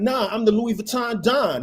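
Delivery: loud, insistent shouting. Retelling how a man yelled at the stage crew, demanding his bag and declaring his title, yelling out. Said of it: "He's like yelling it out".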